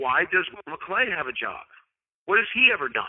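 teasing, tongue-in-cheek, playful sarcastic tone. Asking a pretend question to make a point: sarcastic and playful. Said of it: "I'm being sarcastic and playful in saying".

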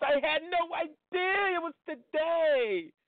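flamboyant, very high camp voice.

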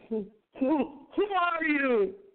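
high, stammering, insistent voice. Ichabod, terrified, demands to know who the looming figure is: stammering demand. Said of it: "he demanded in stammering accents".

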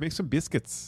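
Midwestern-accented speech. Told a Midwestern accent is needed, a speaker tries it out: Midwestern accent. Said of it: "Master of accents".

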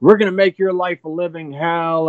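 high, mild, held-back taunting yell. Retelling a couple screaming at a man across the street: imitating someone screaming. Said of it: "screaming at this dude".

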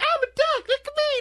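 very high, slow, squeaky voice. Imitating a cartoon kid's voice that drives parents nuts: high squeaky Caillou voice. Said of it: "He has this super high, squeaky voice".

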